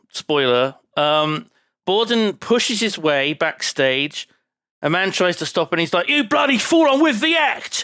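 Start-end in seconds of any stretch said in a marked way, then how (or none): 6.1-7.9 put-on very high-pitched, rapid London accent. Retelling a film scene where Borden shoves backstage: imitating Borden's London accent. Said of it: "He's got a great London accent in this movie".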